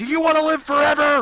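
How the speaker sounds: very high yell, projected far. Playing a character in a fight, yelling back at a dwarf ally: yelling back at someone. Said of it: "yelling back at him".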